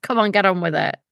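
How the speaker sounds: ordinary talk, nothing marked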